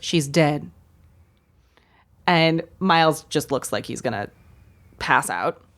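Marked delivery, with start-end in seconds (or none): 0.0-0.7 imitated deadpan delivery, pitched lower. Retelling how the secretary answers a question: imitating a deadpan delivery. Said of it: "she very deadpan goes".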